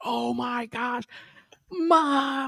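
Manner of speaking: shrieking scream, very high and slow. Retelling how an excited fan called his mother: imitating someone screaming. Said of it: "He's screaming".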